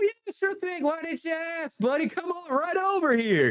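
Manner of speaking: very high, squeaky character voice. Voicing a game character who failed a saving throw: voicing Ryan. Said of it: "he says".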